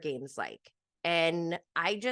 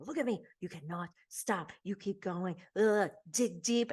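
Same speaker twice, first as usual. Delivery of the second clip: mock encouraging hype-up, whispered. Retelling a man crouched down with others, acting out a whispered hype-up. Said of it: "he's like kind of hyping them up".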